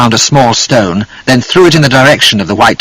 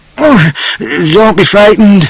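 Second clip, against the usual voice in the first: put-on very high, slurred, drunk-sounding voice; 9 semitones higher than usual. A drunk man, just grabbed by a stranger, speaks in a slurred drunken voice. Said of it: "the man said in a slurred voice".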